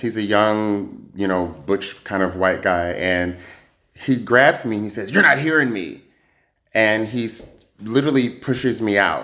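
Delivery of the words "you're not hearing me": mock angry, high, incensed tone. Retelling what an incensed club guard said while grabbing the speaker: imitating an incensed guard. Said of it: "this guy very quickly gets incensed".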